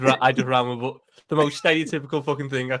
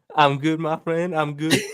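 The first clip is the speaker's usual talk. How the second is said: terrible fake American accent; 3 semitones higher, 3 dB louder than usual. Greeted by the host and asked how they are doing: bad fake american accent. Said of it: "the two worst American accents I've heard".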